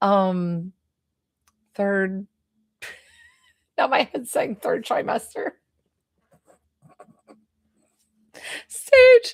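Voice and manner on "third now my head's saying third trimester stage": laughing through words, pitched up and swooping. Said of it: "I'm sorry I'm laughing".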